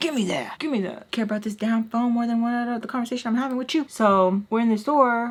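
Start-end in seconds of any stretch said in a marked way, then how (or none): 0.0-3.8 mock angry, mad scolding voice. Retelling how mom scolded over the phone: imitating an angry mom. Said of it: "especially when she was mad".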